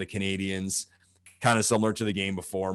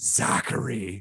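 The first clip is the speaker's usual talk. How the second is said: put-on totally disappointed, scolding parental tone. Retelling a streamer reacting to a missed empty net: imitating totally disappointed parent tone. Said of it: "like someone talking to their child of, like, total disappointment".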